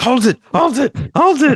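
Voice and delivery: high foreign commentator voice. Retelling a cartoon episode, imitating a foreign soccer announcer. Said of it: "a foreign announcer, and they're like".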